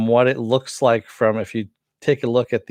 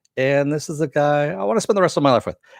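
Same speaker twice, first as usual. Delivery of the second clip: quick, rushed, glossed-over, higher-pitched delivery; 5 semitones higher than usual. Imitating how Poison Ivy says the line: rushing through like Poison Ivy. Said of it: "she kinda rushes through it".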